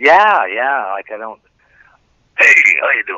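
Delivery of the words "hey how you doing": comedy film ghoul character voice. Trying the old voice again after being urged to: Beetlejuice voice. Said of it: "that sounded more like the movie Beetlejuice".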